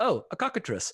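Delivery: put-on very heavy, high-pitched Czech accent. Retelling how another player named a creature: imitating a very Czech accent. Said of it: "with, like, a very Czech accent".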